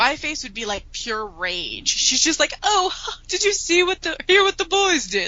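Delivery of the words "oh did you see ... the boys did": very high-pitched, chirpy, very cheerful voice. Retelling a movie scene, Molly Weasley impression. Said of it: "Your Molly impersonation".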